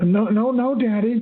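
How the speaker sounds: put-on high, frightened, pleading little-kid voice. Recalling a stepfather asking about the coffee at age three, retelling a scared three-year-old. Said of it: "I said out of fear".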